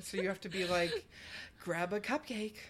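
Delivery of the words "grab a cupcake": creepy, spooky voice, quieter. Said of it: "you have to say the first line".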